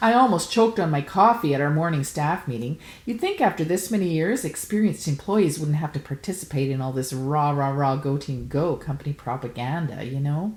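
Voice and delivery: ordinary talk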